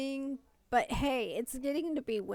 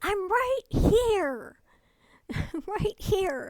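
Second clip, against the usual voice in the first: frazzled, exasperated, loud, agitated yelling; 9 semitones higher, 8 dB louder than usual. Retelling someone calling for her across rooms, the speaker re-enacts her agitated yell answering. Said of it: "I'm like just yelling".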